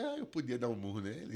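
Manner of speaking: acted-out tearful, mock-sobbing, crying while speaking. Retelling answering their mother while still crying, imitating crying while speaking. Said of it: "chorando ainda".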